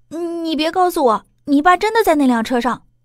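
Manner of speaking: high, trembling, frightened voice. Narrator reads a man's line as he suddenly realizes something: trembling, frightened voice. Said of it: "一脸惊悚地颤声道".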